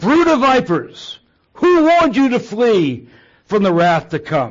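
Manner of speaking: loud, swooping fire-and-brimstone preacher's yell. Imagining a pastor addressing a congregation of visitors: imitating a pastor yelling. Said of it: "he yells out".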